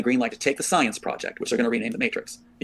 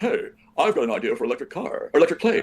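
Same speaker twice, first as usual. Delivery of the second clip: put-on South African accent; 2 semitones higher than usual. Acting out a cameo line, South African accent as Elon Musk. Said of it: "if you do the South African accent".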